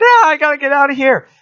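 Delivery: shrill screaming yell, very high and loud. Narrating a scene where a character hides from a troll, imitating a character screaming. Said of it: "he's screaming".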